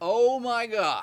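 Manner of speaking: mock high-pitched yelled exclamation. Retelling a hiker reaching the final ledge ahead: imitating someone yelling. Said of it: "yells out".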